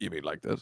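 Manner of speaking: put-on deep bass voice. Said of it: "did you put the bass in your voice".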